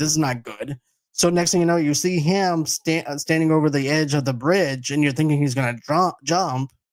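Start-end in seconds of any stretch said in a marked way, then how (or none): 0.0-0.8 put-on panic, much lower pitch. Retelling a scene where one man keeps panicking, imitating Murray panicking. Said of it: "Murray's like panicking the whole entire time".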